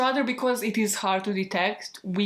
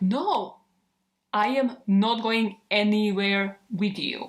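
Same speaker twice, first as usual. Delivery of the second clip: mock pissed-off "no", slow, word by word. Retelling how a woman refused a man at a bar: imitating someone angrily refusing. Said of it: "she got really pissed and she was like".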